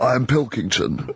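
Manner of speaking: disembodied head-in-a-tank ruler voice. Imitating a friend imagined as a preserved head in a fish tank. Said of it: "And he speaks like this".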